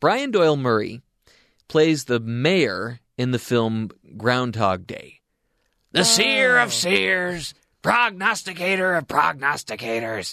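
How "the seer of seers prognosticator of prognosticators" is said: really gruff voice, slightly high. Showing where listeners might know the actor from, quote his Groundhog Day mayor in a gruff Brian Doyle-Murray impression. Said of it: "Just that really gruff voice".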